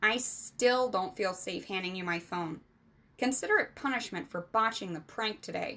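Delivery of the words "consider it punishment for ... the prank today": ordinary delivery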